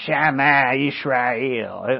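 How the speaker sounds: rough, gruff voice with a Texas twang. Retelling how a colonel said a Hebrew phrase, Colonel Theme's gruff Texas accent. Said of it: "he say it with his gruff voice and his Texas accent".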